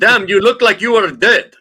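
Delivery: put-on Russian accent. Reading out a streamer's translated words after asking for russian accent actors: put-on russian accent. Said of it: "Russian accent actors in the house?".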